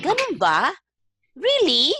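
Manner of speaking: surprised reaction in Tagalog, high pitched and loud.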